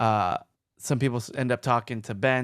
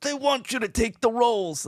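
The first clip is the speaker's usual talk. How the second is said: put-on pitched-up, high old geezer voice; 11 semitones higher than usual. Quoting a Boy Meets World scene where Cory answers Topanga, in Cory's old man voice. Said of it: "Like in this like this old man voice".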